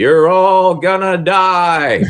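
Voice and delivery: loud, high, spooky yell, "die" stretched long. Retelling a comedy club co-owner yelling at a passing trolley tour; mock yelling. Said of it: "he always yells out".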